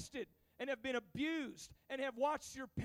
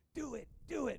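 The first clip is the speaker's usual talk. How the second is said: little demon voice, tempting. Telling of a man about to do something bad, voicing the demon on his shoulder: little demon voice. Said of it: "a little demon jumps up on his shoulder, and he's like".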